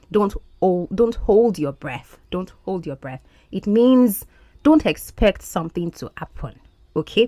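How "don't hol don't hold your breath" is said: ordinary delivery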